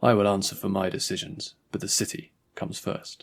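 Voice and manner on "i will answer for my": usual speaking voice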